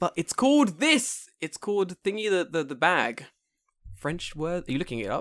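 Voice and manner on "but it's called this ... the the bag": mock angry, loud, high, drawn-out scolding screaming rant. Imitating a listener who is mad at them: imitating Lysandra screaming. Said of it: "She's screaming at us".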